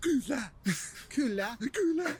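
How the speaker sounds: ingressive "kula," said on an inhale. Explaining how Finnish speakers answer yes, imitating saying yes on an inhale. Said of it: "they like breathe in while they talk".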